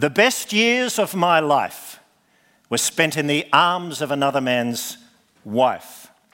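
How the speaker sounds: put-on clear voice, projected to the whole room. Retelling a man repeating himself as every eye turns to him, loud voice. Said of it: "he said in a loud voice".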